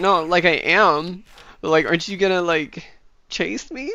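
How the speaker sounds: put-on upset, let-down, distraught pleading tone. Retelling how she answered after being told off: imitating someone distraught. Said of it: "got all distraught".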